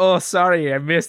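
put-on European accent. Describing the guy who hit the other guy, imitate his European accent. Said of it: "has like a European accent".

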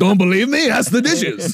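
high-pitched, put-on, cartoonish French accent. Showing a bad French accent like the Beauty and the Beast candlestick. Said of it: "My French accent is just the fucking candlestick from Beauty and the Beast".

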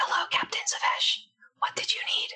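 soft, breathy, hushed whisper. A character appears to the captain in his quarters: whispering. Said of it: "he's going to start whispering".

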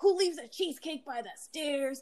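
angry, mad, defensive retort tone. Retelling how Dad answered after being yelled at: imitating a mad, defensive dad. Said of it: "He's, like, mad".

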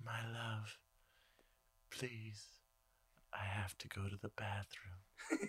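hushed, low, very soft, slow, sultry elf voice. Mocking how the elves talk in the film: imitating Liv Tyler's low sexy voice. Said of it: "she talks very low, sexy voice".

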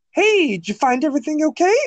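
very high-pitched, princess-like voice.

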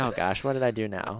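plain

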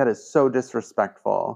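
ordinary talk

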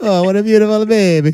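put-on very high-pitched old Italian barber voice. Retelling what an old barber said while shaving: imitating an old italian barber. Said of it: "the old Italian barber would shave him and say".

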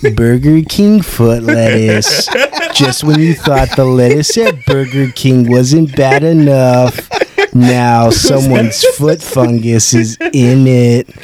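slow countdown narrator voice, every word drawn out. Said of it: "Don't make me do that voice".

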